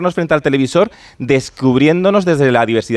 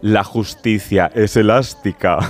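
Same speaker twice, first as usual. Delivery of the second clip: low, wicked villainess voice; 5 semitones lower than usual. Speaker recalling a line from Concha Velasco's character in Herederos, in a mock-evil voice. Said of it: "decía así con voz de muy mala, malísima".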